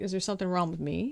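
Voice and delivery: ordinary talk, nothing marked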